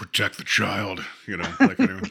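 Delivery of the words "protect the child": voice run through a processor, voice-changer sound. Retelling what a man keeps adding, like through a voice processor. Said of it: "he's going through a processor".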